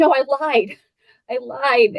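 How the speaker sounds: mock crying, high, tearful, insistent child's voice. Recalling herself as a crying fourth-grade girl, she acts out crying as a child. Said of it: "Silly 4th grade girl who's crying".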